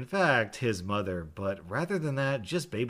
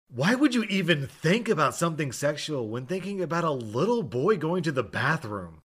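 put-on loud sarcastic outburst, pitched higher; 6 semitones higher, 4 dB louder than usual. Retelling answering a rude woman about a restroom trip: imitating a loud sarcastic retort. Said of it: "very loudly".

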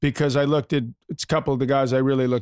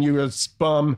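ordinary talk, nothing marked

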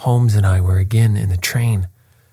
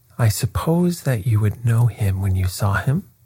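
usual speaking voice

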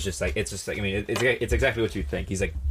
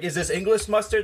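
angry yell, pitched higher; 11 semitones higher than usual. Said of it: "screaming at the guy behind the counter".

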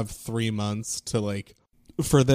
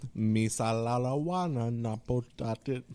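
put-on alien voice, quieter and slower; 7 dB quieter than usual. A comedian shows a friend a movie-creature impression: Jabba the Hutt impression. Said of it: "That's my Jabba the Hutt impression".

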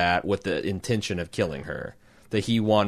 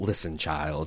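hard, flat, cutting, dismissive delivery; 4 semitones lower, 5 dB quieter than usual. Retelling a scene where an immortal shuts a woman down: imitating a character shutting someone down hard. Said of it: "I do the whole".

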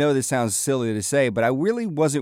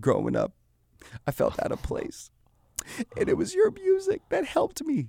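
put-on emotional voice, higher and quieter; 6 dB quieter than usual. Retelling what a fan told him: imitating someone getting emotional. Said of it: "he starts to get emotional and he says".

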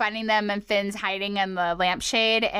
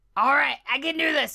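high-pitched cartoon character voice; 5 semitones higher than usual. Asked by another speaker for a character impression, doing a Jake impression. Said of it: "this is Jake".

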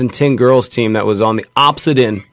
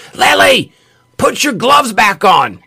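put-on yell, much higher pitch, slower; 11 semitones higher than usual. Retelling a dad yelling across the field at his daughter, imitating a dad yelling. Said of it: "you hear this dad yelling across the field".

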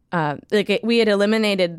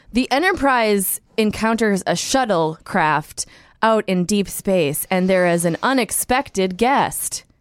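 teaser-style promo blurb narration read. Doing an impression of a Netflix episode summary: Netflix summary impression. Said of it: "I'm gonna do an impression of what the Netflix summaries lately have been".

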